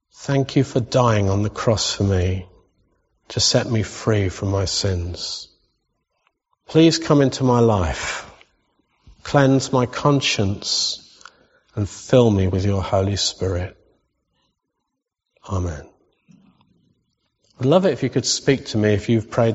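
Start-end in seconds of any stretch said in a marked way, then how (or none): 0.2-15.9 read aloud quite slowly and deliberately. Leading listeners through a prayer to say along in their minds, reading slowly. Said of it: "I'll read it quite slowly".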